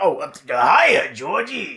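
slow, drawn-out, smoky, worn clown voice. Imitating a film clown's first greeting to a child: Tim Curry Pennywise voice. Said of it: "the birthday boy comes around and he's like".

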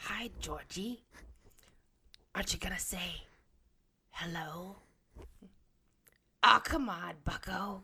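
loud, eerie, creepy, sweet coaxing voice. Performing a short scene for others who react afterwards; creepy voice. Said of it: "That was really creepy and great".

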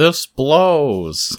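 high, windy voice, stretching "blows". Host asks the wind how it is doing and answers as it, wind voice. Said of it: "That was my wind voice".

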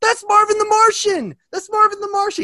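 mock very high, loud, pumped excited fanboy cheer. Retelling how LeBron James reacted to a cartoon character: imitating LeBron James pumped fanboying. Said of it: "all pumped and fanboying about him".

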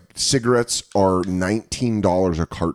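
plain

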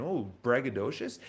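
ordinary delivery

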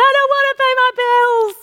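put-on very high, loud toddler tantrum wail, crying and whining. Describing an adult holding a bill like a toddler, imitating a crying tantrum. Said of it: "she's holding the bill and she's crying, going".

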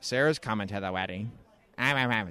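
low, dropped put-on voice. Imitating Luke talking about the wedding: Luke voice. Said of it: "That's my Luke voice".

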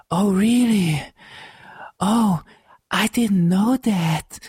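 each word breathed out airily at very high pitch. Complaining about a film's lead actress, mocking her delivery: breathy exhaling Ana de Armas imitation. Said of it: "ilyen kilélegzés volt".

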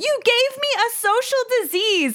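mock very high-pitched, shrill shout. Retelling a scene from a TV show, imitating a character shouting. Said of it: "she literally shouts at him".

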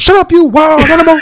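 put-on southern drawl. Recalling a Klan member's lines from a reading, in Clarence Boddicker's southern drawl. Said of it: "he said in that proper southern drawl".

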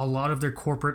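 ordinary talk, nothing marked

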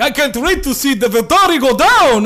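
cheesy vampire voice. Mocking two Romanian vampire characters from a story: stereotypical vampire accent. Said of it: "they're talking like that. It is so stereotypical vampire".

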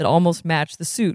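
ordinary delivery

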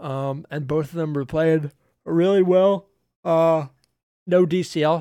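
words stretched out slowly through a yawn. Chatting with another speaker, talking through a yawn. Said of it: "Sorry, I was yawning".

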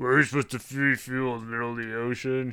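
put-on snarky voice. Retelling a movie character's comment about refueling: imitating a snarky comment. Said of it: "after some snarky comments".

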